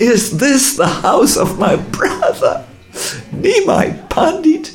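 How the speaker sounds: very high, rising, ecstatic shout. Retelling a man who kept asking the narrator a question, ecstatic shouting. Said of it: "with great ecstasy shouting".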